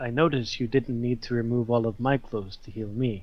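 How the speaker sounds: leaned-in, soft, close half-whisper. Leaning in close to the healer in character: half-whispering in character. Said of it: "I lean in close and I whisper and I say".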